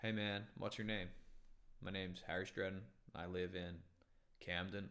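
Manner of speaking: plain, casual, everyday American accent. Showing how their voice would sound if born in America: casual American accent. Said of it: "Just normal American, everyday American".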